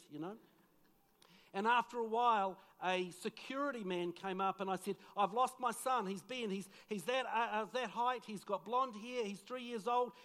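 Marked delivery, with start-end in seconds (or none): none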